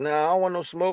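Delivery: ordinary talk, nothing marked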